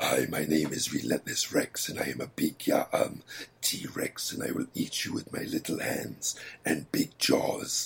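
put-on Austrian-accented villain voice. The speaker demonstrates his T-Rex role in an adventure game: Austrian, Shredder-like T-Rex voice. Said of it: "kind of like an Austrian, like, Shredder from Teenage Mutant Ninja Turtles, the voice sounds like".

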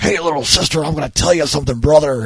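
very high, loud pro-wrestler mic hype voice. Imitating the dubbed mayor, like a wrestler: imitating the mayor's dub like a wrestler. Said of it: "always like a wrestler".

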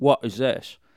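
unpolished fake British accent. Listener repeating the question of a man coming out of the bushes, sort of British accent. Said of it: "this is sort of a British accent".

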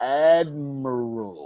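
"admiral" stretched out very slowly.

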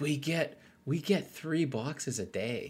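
slow, high half-whisper with words drawn out. Complaining about daily deliveries while the wife is nearby: half-whispering. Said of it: "I'm gonna whisper this".

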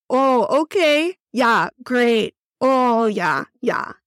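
put-on strong Midwestern accent, drawn way out, very slow. Speaker recalls talking to her mom, strong midwest accent. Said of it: "my accent would get super strong".

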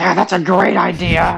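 put-on slow, overly excited, cackling kid voice.

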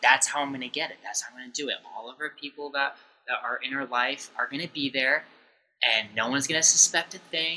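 ordinary talk, nothing marked

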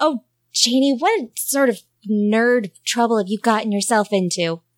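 muttering, mumbling. Voicing a character looking at a photo: muttering to herself. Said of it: "Jessie kind of mutters to herself".

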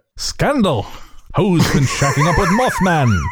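vintage newsreel announcer delivery. Riffing a teaser for their show, the speaker reads headlines in an old-timey newsman voice. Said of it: "You sound like an old-timey newsman".

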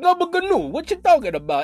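poor, clumsy put-on Italian accent. Retelling how a man sounded, the speaker attempts a bad imitation Italian accent. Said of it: "I can't really do an Italian accent, but that's what he sounded like".

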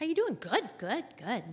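fake cheer, high, loud sing-song chirp.

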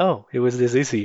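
normal talking voice

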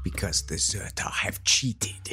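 said with a snarl. Narrating a character's reply in a podcast game, snarling. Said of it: "She snarls".

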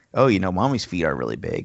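ordinary delivery

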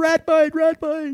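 acted, very high, drawn-out, panicked yelling. Retelling a rat biting the hand at night: retelling own yell. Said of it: "So I'm yelling".

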